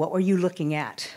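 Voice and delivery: put-on deadpan voice. Speaker retelling a boy's sudden question, imitating a voice with no emotion. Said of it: "with no emotion at all in his voice".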